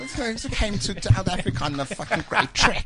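put-on high, croaky, laughing old lady voice.

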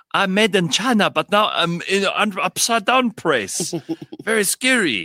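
exaggerated Chinese accent, slow. Giving a voice to a poor little object, in a stereotypical chinese accent. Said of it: "very like stereotypical Chinese accent".

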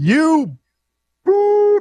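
high, loud heckler-style yell.

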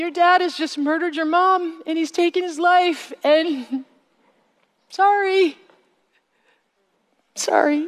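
acted crying with choking. Retelling a crying woman's repeated apology: imitating choking, crying apology. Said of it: "crying so hard that she sounded like she was choking".

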